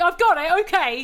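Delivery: irritated, tetchy, very high, dragged-out voice. Showing how a radio reply can sound, tetchy. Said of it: "it can sound a bit tetchy".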